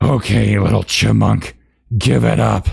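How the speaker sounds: rough, menacing, hissed voice. Reading a story aloud, voicing the evil one's demand, hissed. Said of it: "hissed the evil one".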